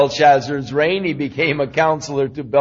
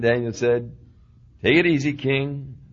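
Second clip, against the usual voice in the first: ordinary talk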